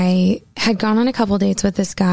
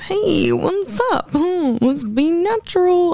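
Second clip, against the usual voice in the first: exaggerated cartoon voice, very high, very slow; 10 semitones higher than usual. Describing how he stops being natural, greeting like a cartoon version of himself. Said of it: "I just turn into like a cartoon version of myself. ... with that voice".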